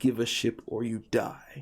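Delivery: snarling, growling creature voice. Voicing a big ripply creature that repeats its demand; snarling creature voice. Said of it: "He just repeats".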